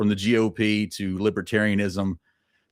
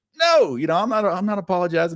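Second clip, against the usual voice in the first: high, squeaky little voice; 11 semitones higher, 3 dB louder than usual. Retelling how Ron Paul refused to apologize: Ron Paul's squeaky voice. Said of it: "his little squeaky voice".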